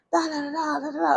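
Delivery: high, mock angry yelling. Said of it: "he was yelling".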